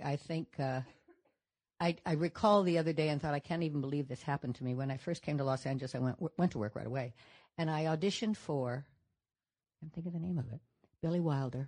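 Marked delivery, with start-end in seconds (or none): none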